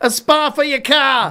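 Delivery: put-on very loud, very high Boston accent. Retelling what they call their garage, best Boston accent. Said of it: "using my best Boston accent".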